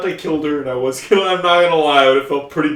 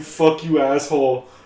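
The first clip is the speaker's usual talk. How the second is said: plain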